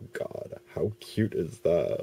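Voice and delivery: play-acted, heavily sarcastic gush, slow and swooping. Retelling a reaction to an April Fools insult, retelling a sarcastic remark. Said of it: "In a sarcastic voice, of course".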